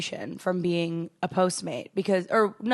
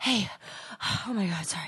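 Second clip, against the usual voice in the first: fake panting, out of breath, quieter; 8 dB quieter than usual. Retelling how they acted out of breath for tips: imitating being out of breath. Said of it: "act real out of breath and be like".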